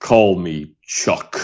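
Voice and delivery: very low, bottom-of-range movie-star voice. Retelling meeting Charlton Heston on set, imitating Charlton Heston's voice. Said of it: "in that voice".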